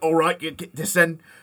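loud, high Cockney orc voice. Describing the game's orc characters heading out to war, in a Cockney orc voice. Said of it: "their Cockney accents, going".

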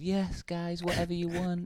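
rough put-on American accent. Acting out someone who just does as he's told, in kind of an American accent. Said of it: "That was kind of that an was American a, accent".

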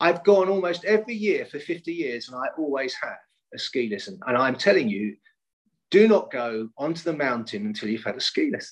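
acted stern, firm, insistent and severe tone. Retelling a friend's warning before a ski trip: imitating a friend speaking sternly. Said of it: "very sternly said".

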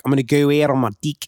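put-on New Zealand accent, vowels slanted further. Comparing accents with friends, doing how a New Zealander would say it: New Zealand accent impression. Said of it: "a New Zealand would be like".

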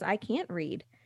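acted weepy, tearful speech through sobs. Retelling a daughter's tearful words to her mother: imitating a crying child. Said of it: "starts crying and says".

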